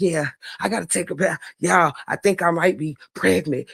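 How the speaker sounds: low, secretive, hushed stage whisper. Retelling words someone said on a live video: imitating someone half-whispering. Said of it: "When you was whispering that shit into a fucking live".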